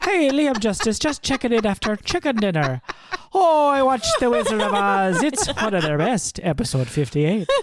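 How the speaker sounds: put-on poor Irish accent. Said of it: "questionable attempt at an Irish accent".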